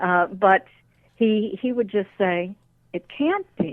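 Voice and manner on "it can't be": very high, quiet, hushed under-breath murmur. Retelling what he said to himself on the hypnosis tapes: imitating a quiet under-breath voice. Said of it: "in a very quiet sort of voice".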